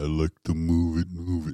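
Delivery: put-on reservation accent. Podcast host mimics how some people say a phrase, in a Rez accent. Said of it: "with like a Rez accent".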